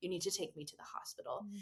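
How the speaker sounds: whispering. Recounting what the speaker whispered to him in a bathroom: retelling a whisper. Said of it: "I took him with me to the bathroom and I whispered".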